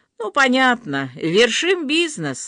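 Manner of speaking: derisive, scoffing tone. Reading a story aloud, voicing Rita replying after Natasha, mocking. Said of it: "насмешливо отозвалась Рита".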